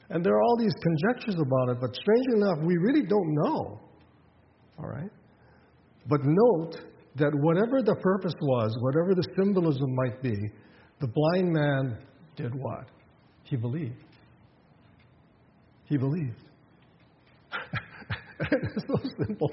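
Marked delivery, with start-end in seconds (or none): 18.5-19.5 high-pitched, amused laughing. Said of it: "I'm laughing".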